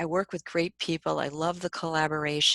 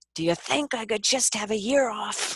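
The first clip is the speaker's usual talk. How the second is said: acted-out cry, called upward, pitched higher; 6 semitones higher than usual. Retelling a devastating moment in the bathroom, retelling own yell to god. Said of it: "I say yelled to God".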